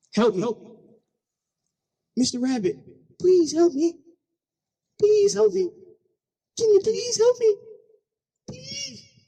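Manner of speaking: play-acted high, terrified, desperate pleading, rising. Telling a story, voicing a snake trapped under a rock, talking to the rabbit: mock-petrified snake voice. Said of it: "We've never heard a snake sound this petrified".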